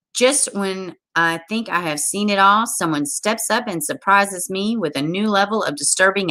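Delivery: ordinary delivery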